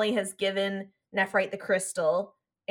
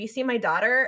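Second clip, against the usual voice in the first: ordinary talk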